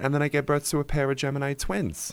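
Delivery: put-on Long Island accent. Quoting a woman from Long Island and showing how she talks, in a put-on Long Island accent. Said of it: "That's how she talks".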